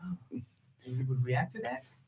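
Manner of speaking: very quiet, low, hushed, flat deadpan monotone. Retelling how he questioned her back while she talked, imitating a monotone voice.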